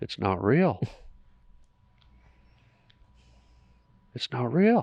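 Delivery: mock mutter under breath. Retelling a moment alone on the front lawn: imitating muttering under breath. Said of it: "I said it out loud under my breath".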